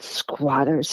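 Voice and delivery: whispered with disgust and distaste. Retelling an uncle's reply about squatters: imitating a disgusted whisper. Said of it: "he whispered in disgust".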